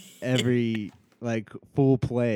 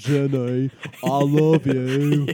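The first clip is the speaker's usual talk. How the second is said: very slow, even, drawn-out delivery; 2 semitones higher than usual. Showing that a real voice sounds like Forrest Gump: Forrest Gump voice. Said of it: "my real voice is like Forrest Gump".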